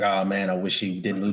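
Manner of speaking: ordinary talk, nothing marked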